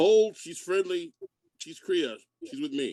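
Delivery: big, booming, resounding, high-pitched magical voice. A tabletop player's character uses magic to calm an armed crowd, booming voice. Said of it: "in a booming voice".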